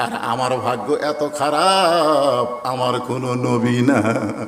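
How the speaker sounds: low, slow, drawn-out, sorrowful tearful lament.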